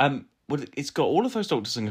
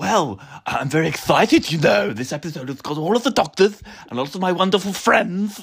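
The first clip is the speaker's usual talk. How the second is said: heavy lisp on every s, pitched up, loud; 6 semitones higher, 4 dB louder than usual. Answering how they are, in the role of Jon Pertwee: Jon Pertwee voice with a lisp. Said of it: "Why have you suddenly got a fucking lisp".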